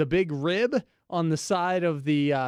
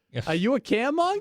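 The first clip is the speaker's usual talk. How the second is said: put-on old-school Boston accent, pitched up; 8 semitones higher than usual. Recalling a childhood way of speaking, asking the question in a boston accent. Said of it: "when I was growing up and I had a Boston accent, it would be a caremonger".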